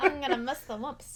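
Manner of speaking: cartoonish, tough-guy, put-on gangster voice. Continuing a villain impression, now sounding like a gangster: Wario gangster voice. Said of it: "now he's a gangster?".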